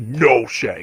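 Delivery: super dark, low voice. Retelling a movie scene where Mary Jane answers Shaggy: super dark Mary Jane voice. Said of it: "super dark".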